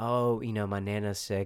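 plain

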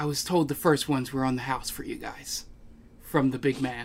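hushed whisper. A bartender sets drinks before the group and leans in, whispering. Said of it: "he leans in and whispers".

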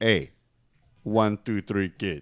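slow, drawn-out tough-guy delivery. Retelling a wrestling interview with an impression of Razor Ramon. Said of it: "this is the impersonation I shouldn't do".

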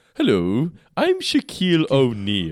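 haughty, snooty, swooping, very slow drawl. Recounting a cartoon episode, doing Homer's self-introduction in Homer Simpson's haughty voice. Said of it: "Homer's haughty voice".

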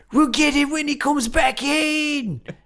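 high, slow, bad Australian accent. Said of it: "It's so bad".

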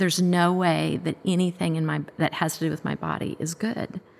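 usual speaking voice

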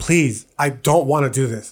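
acted, desperate, begging, pleading tone. Recalling lying in bed praying, retelling a desperate plea. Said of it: "just begging".

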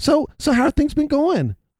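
very high, chatty, small-talk voice. Retelling a dentist who chats mid-checkup: imitating a chatty dentist. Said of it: "he's got his freaking finger down your throat".

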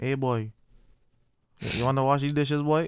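Trinidadian accent impression. Talking about who is more Trini, do a Trini accent impersonation. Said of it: "I can't really do a Trini accent, but it's just more of an impersonation".

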